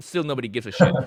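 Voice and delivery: normal talking voice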